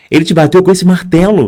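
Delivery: mock jittery, nervous, fast, flustered babble. Recounting a hammer attack, imitating the nervous woman who offered help. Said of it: "E ela nervosa".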